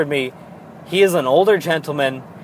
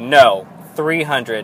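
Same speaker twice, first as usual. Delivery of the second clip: put-on firm voice; 4 semitones lower than usual. Retelling how Dad replied: imitating Dad's firm tone.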